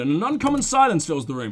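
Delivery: ordinary delivery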